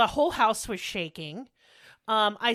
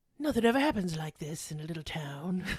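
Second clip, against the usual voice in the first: put-on true crime narrator voice, lower and quieter; 5 semitones lower, 5 dB quieter than usual. Asked to do the impression, describing the quiet town: Keith Morrison impression. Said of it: "Keith Morrison".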